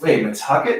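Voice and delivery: normal talking voice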